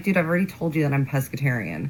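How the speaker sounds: ordinary delivery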